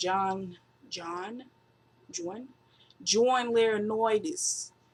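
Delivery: horrible put-on New York accent, drawn out. Naming someone while recapping a backstage segment: horrible New York accent. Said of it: "That was a horrible New York accent".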